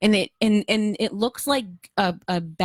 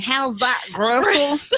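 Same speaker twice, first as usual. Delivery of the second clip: sudden, pitched-up, put-on American Southern accent; 5 semitones higher than usual. Teasing the other speaker for suddenly turning Southern, in a put-on Southern accent. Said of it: "You all of a sudden were a Southerner".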